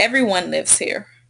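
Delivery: plain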